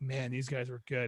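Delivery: plain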